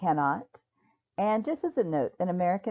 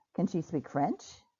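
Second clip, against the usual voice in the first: rising intonation on the word "French"; 5 dB quieter than usual. English lesson on yes-or-no questions: rising intonation on French. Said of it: "my intonation will rise at the end".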